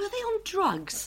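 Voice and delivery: high, slow motherly voice.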